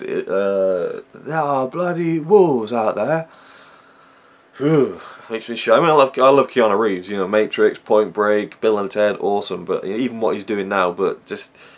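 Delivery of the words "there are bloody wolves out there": bad, botched British accent, pitched up. Imitating an actor's line from a film: Keanu Reeves' bad British accent. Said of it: "how bad his British accent was".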